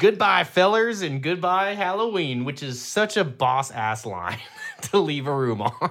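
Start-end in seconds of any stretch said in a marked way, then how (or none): 0.0-2.5 mock loud, shrill screamed witch voice. Retelling a scene where the witch gets away, imitating the witch screaming. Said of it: "just screams".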